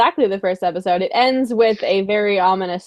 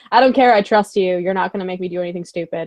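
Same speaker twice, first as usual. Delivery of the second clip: ordinary talk, nothing marked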